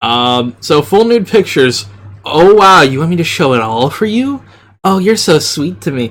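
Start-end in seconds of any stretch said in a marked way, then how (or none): 2.2-6.1 put-on woman's voice. Reading out a subscription tier text in a put-on female voice. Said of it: "I'm so sorry for this voice".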